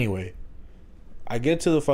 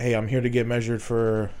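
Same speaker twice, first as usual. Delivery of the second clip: usual speaking voice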